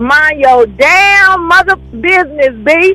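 slow put-on voice with damn drawn out. Answering a letter from the Madhouse Nation in a Kevin Hart voice. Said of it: "in my Kevin Hart voice".

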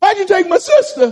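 put-on angry grieving voice. Acting out people questioning God over lost loved ones: imitating angry grieving people. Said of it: "Why do people become angry?".

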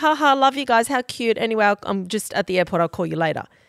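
mock casual, breezy, totally unbothered nonchalant tone. Retelling a reply to a panicked voice message: imitating Sophie's nonchalant reply. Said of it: "Sophie just replies really nonchalant".

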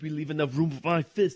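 put-on voice, barked, climbing to a high shout. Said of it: "you haven't done Arnold in a while".

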